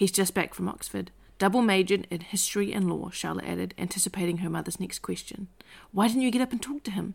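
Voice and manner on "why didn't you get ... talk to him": excited voice bursting with keen eagerness. A mother questions her daughter about a young man, speaking excitedly. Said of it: "Lim said excitedly".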